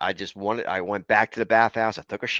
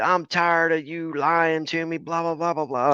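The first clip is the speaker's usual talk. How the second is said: put-on drunk woman's screaming, higher; 7 semitones higher than usual. Retelling a drunk woman at the campground screaming: imitating a drunk woman screaming. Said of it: "she's over there hollering, screaming".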